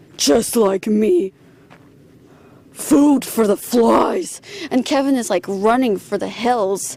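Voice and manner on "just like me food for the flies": slower put-on drunken, corpse-like voice. Retelling a creepy story, voicing Kevin's father: put-on corpse-drunk voice. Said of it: "Kevin's father's corpse-drunk voice saying".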